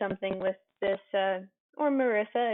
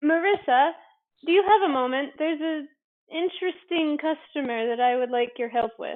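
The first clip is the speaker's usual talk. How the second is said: raised, higher-pitched voice calling out; 6 semitones higher, 5 dB louder than usual. Game master voicing a character calling through a door to Marissa: raised voice, calling through door. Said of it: "raises her voice".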